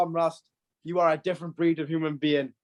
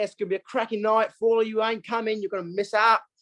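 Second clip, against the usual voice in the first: fast put-on Australian accent; 4 semitones higher than usual. Hyping up the night for those not coming; Australian accent. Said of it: "I was more Australian".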